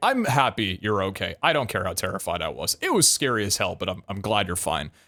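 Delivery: very assertive, firm, insistent no-arguing tone. Retelling what a woman said after an apology, imitating a very assertive tone. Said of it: "Like very assertively".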